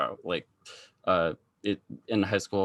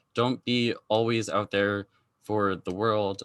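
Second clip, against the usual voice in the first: usual speaking voice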